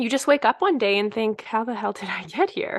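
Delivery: emotional, choked-up, catching voice. Talking with a host, getting emotional, choking up. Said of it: "I'm getting emotional about this".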